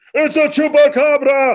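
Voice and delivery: very loud, shrill, high stage yell. Retelling a kid's line from a play, imitating a loud shout. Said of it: "surprised that he talked so loud".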